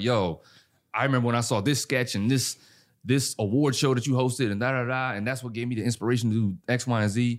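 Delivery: ordinary delivery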